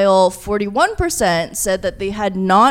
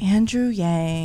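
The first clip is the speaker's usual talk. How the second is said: said more quietly; 5 dB quieter than usual. Asked whose fans draw criticism, the guest names him like an ex-boyfriend. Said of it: "You said that like he was your ex-boyfriend or something".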